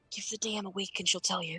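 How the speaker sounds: soft, hushed half-whisper, barely audible. During a tabletop game, the scale half-whispers its answer back, half-whispering. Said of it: "the scale whispers back".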